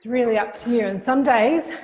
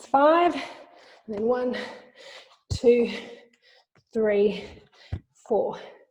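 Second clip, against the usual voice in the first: out of breath, puffing. Explaining the pace while exercising, out of breath. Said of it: "you can hear I'm getting a bit puffed".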